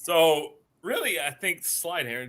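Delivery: slow voice, cracking mid-phrase. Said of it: "do you like my voice cracking there".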